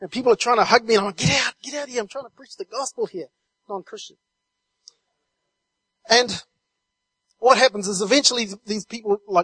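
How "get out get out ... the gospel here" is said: mild, half-shouted, dismissive yell. Retelling pushing away people who hug during preaching: retelling own yelling. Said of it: "I'm yelling and no one's listening".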